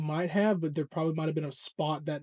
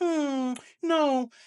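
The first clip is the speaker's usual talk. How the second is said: shrill mocking tease, very high and loud; 10 semitones higher, 5 dB louder than usual. Retelling a wrestler's promo line, imitating Becky Lynch teasing. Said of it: "she was teasing it".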